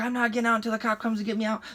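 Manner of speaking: heated, high, mild half-yell, stubborn. Retelling a police stop, imitating a friend refusing to leave the truck: imitating a friend yelling. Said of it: "He's yelling at me".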